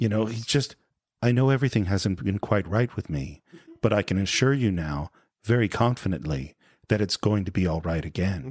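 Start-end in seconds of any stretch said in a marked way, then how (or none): 1.2-8.5 low, calm, soothing, steady reassuring tone. Retelling how he talks to Dave, imitating a calm, reassuring voice. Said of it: "so calm, reassuring voice".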